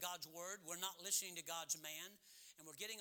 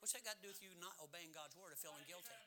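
plain

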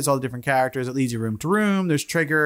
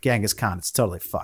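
usual speaking voice

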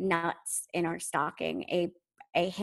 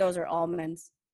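ordinary delivery

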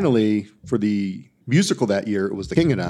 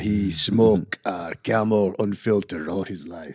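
put-on old man's old-country way of talking. Describing a grandfather from the old country, showing how he talked: imitating Grandpa's voice. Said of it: "he had a talk like this".

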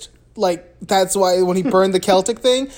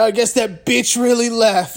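put-on drunk man voice. Retelling a scene where the drunk dad walks in: imitating a drunk man. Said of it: "So he's drunk, walks in, he's like".

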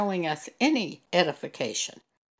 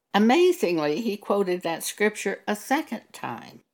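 normal talking voice

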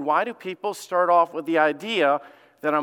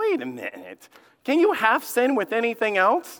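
high, swooping sarcastic tone with feigned puzzlement; 6 semitones higher than usual. Speaking to listeners, the speaker is openly being sarcastic. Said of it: "I'm being sarcastic right now".

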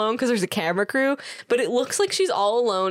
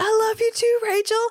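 mock stoked, thrilled, over-the-moon voice, very high; 13 semitones higher than usual. Retelling a scene from a show, voicing him answering her: imitating someone stoked. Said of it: "And he's so stoked".

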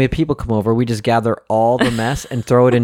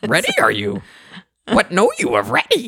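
pitched up and swinging, lilting melody; 6 semitones higher than usual. Asked by a listener to say the written line again, repeat it in a Yoda voice. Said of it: "say it again".

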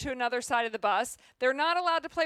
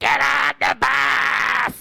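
put-on very loud, raspy, rough old bus-driver hollering voice; 12 dB louder than usual. Imitating a bus driver who is probably in her 60s to 80s, as an imitation of a woman bus driver. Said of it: "do an imitation of Stella in Vegas' bus driver".

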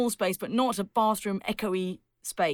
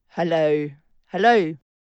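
serious voice with downturned mouth; 4 semitones lower, 8 dB louder than usual. Speaker showing a learner how mouth shape changes a greeting: hello with mouth turned down. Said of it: "say hello to me with your mouth facing down".

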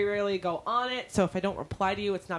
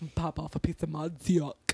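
laughing through a lower put-on voice; 4 semitones lower than usual. Imitating a Paul Rudd movie line while laughing: laughing through a Paul Rudd impression. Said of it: "I'm not doing it good right now".

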